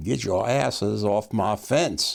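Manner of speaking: put-on drawling Texas accent, stretched vowels. Retelling being shouted at for sitting on a fence, deep Texas drawl. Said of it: "this deep Texas drawl saying".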